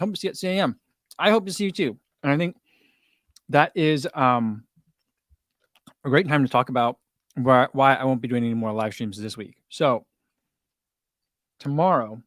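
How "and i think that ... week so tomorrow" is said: muffled speech, talking while chewing food. On a live stream, talking to viewers with a mouthful of muffin. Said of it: "a mouthful of muffin".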